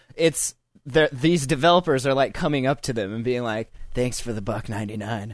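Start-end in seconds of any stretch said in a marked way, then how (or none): 4.0-5.4 unsettling, creepy put-on voice. Retelling how app developers approach a buyer: imitating creepy developers. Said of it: "All, like, creepy and stuff".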